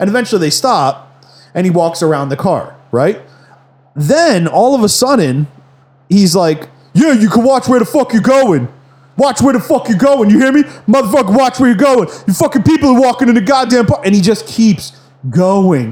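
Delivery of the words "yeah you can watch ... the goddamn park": fake blustering tough-guy rant, pitched up. Retelling a man yelling at a driver in a parking lot: imitating a guy acting tough. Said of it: "fake-ass tough guy trying to act tough".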